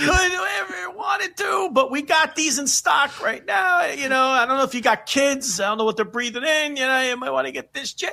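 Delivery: put-on cracking high voice. Retelling a man pressing a customer to replace a car part, imitating a voice cracking high. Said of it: "His voice cracks and gets high".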